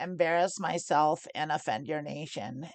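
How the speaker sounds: ordinary talk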